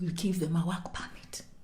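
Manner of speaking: soft, unvoiced whisper. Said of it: "Let's whisper".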